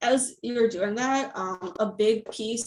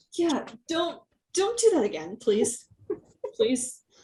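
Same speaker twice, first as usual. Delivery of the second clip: frazzled, anxious, stressed, high-pitched swooping tone; 5 semitones higher than usual. Voicing a character begging another not to leave again: very stressed. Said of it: "he's just very, very stressed".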